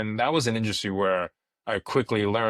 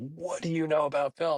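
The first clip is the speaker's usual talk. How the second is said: acted, furious, high, angry yelling; 6 semitones higher than usual. Retelling how a father reacted to film school plans: imitating father yelling. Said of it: "and yelled at me".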